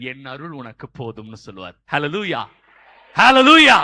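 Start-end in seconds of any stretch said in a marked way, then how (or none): 0.0-1.3 deep, gentle voice of God. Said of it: "அவர் சொல்லுவாரு".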